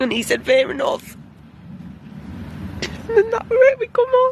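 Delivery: crying through the words, high. Recounting a last exchange with someone after eleven years, crying while speaking. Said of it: "Sorry, I'm crying".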